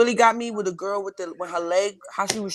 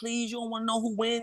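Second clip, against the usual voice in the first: put-on crying, tearful, begging plea; 3 semitones higher, 9 dB quieter than usual. Acting out the ex's reaction to spoilers, imitating someone crying. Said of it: "like crying".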